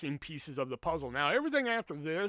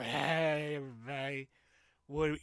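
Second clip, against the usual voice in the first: mock drunk voice with slurred words. Retelling being a lightweight after four drinks: imitating own drunk self. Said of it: "another two more in me, and I'm just like".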